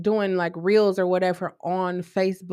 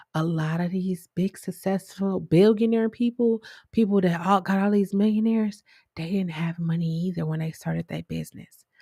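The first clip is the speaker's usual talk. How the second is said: hushed whispered voice. A speaker tells the audience a secret about starting a business; whispering. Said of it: "Why am I whispering?".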